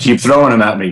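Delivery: plain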